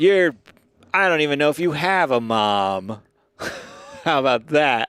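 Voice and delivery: put-on country accent, "mom" drawn out. Starting a mock internet fight with the other speaker, in a country accent. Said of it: "Jovi said that was a good country accent".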